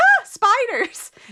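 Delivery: very high, loud, cartoonish shriek. Retelling a movie scene where a streamer sees a spider: imitating a cartoonish scream. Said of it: "he screams like, like you would picture a cartoon character to scream".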